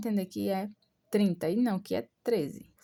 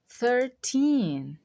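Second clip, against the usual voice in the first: put-on thirteen with -teen drawn out and stronger; 4 semitones higher, 5 dB louder than usual. Explaining how English teen numbers are taught: stress on teen in thirteen. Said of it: "enfatizar as, a última sílaba".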